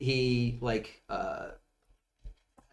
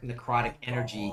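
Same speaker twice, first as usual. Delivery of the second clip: normal talking voice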